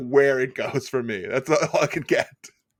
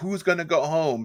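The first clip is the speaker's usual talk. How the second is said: ordinary talk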